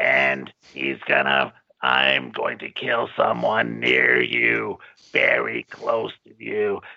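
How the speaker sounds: rough, creaky, disguised voice-changer voice. Recapping the killer's disguised phone call, imitating a voice-box disguised voice. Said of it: "So then he talks like this".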